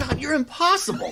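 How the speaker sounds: furious yell, very high, very loud, shrill. Rebuffing someone who offers to listen, a character breaks into angry yelling. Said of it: "Would you two stop yelling".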